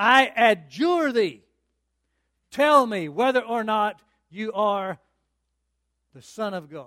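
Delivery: booming, very loud, menacing, threatening tone. Retelling the high priest's words to Jesus, acting out a loud, threatening voice. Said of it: "in a loud, threatening voice".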